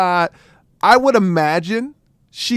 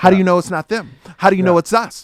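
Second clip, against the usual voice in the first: put-on mouthy, trash-talking tone. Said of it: "she's talking trash to this cop".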